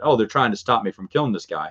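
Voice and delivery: plain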